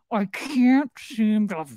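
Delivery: words pushed out through gritted teeth. Describing how a man talks when angry, imitating talking through his teeth. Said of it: "he talks through his teeth".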